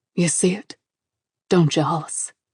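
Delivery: deep, low rumbling voice. At a graveside, Royce Gentry squats by Hollis's chair and speaks: deep, rumbling voice. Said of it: "Mister Royce Gentry's deep, rumbling voice".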